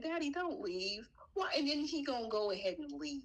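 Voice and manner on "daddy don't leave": mock tearful, high-pitched crying little-kid voice. Retelling how a baby begged his father to stay: imitating a crying child. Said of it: "that poor baby was crying like".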